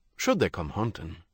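ordinary talk

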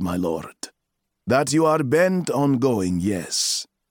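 ordinary delivery

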